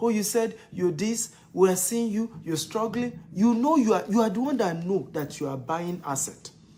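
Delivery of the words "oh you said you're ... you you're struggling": plain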